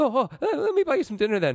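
high, mock Scottish accent.

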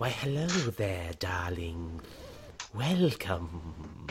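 low, hushed, very soft seductive snake voice. Voicing a snake character in a tabletop game, use a seductive snake voice. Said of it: "I don't know how to do a seductive snake voice".

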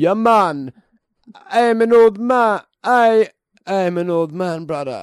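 Jamaican-accented voice. Saying a line in the accent the other speaker requests: jamaican accent.

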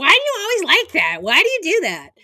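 high, dismissive mimicking voice. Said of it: "they're pretty dismissive".

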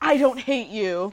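mock terrible line reading, awful delivery. Recapping a scene where she answers him on the staircase, with a terrible line reading. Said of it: "in the worst line reading humanly possible".

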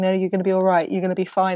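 ordinary talk

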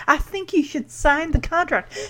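acted shy, hesitant, timid, soft, high-pitched voice. Retelling Dottie's reply to her husband: timid Dottie voice. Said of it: "The timidness comes back".

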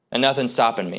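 plain

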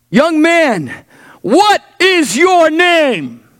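regal, high, slow commanding shout, drawn out. Retelling a story where a king shouts at a deserter: retelling a shout. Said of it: "and he shouted".

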